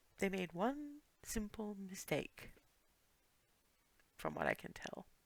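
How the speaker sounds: very quiet, hushed, barely audible murmur. Voicing Alice as she murmurs a remark to Clarity, murmured. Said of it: "what Alice murmurs to Clarity is".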